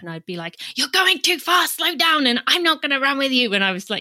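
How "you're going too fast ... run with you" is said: high-pitched, paranoid, insistent yelling. Retelling how she reacted to her husband going too fast: imitating herself yelling. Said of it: "yelling at him".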